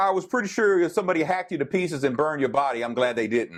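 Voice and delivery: ordinary talk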